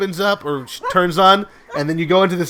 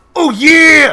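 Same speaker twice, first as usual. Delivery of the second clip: booming, high, huge wrestler-style bellow; 10 semitones higher, 10 dB louder than usual. Acting out a reply to a mugger: Macho Man Randy Savage voice. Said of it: "that's Macho Man Randy Savage".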